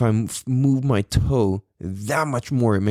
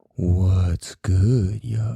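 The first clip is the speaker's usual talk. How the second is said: terrible creepy put-on voice. Going into a break on the show, a host does a bit in a creepy put-on voice. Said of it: "That was so creepy".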